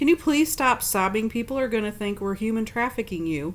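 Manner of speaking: ordinary talk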